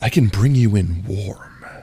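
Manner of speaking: stern, sultry, sexy and intimidating voice. Asked for a line in your sexiest but intimidating voice. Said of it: "say in your sexiest but intimidating voice".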